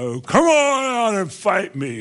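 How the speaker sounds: slow, booming, bellowing giant voice. Retelling a huge man with a shield challenging everyone, imitating a huge man's roar. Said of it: "And he roared out".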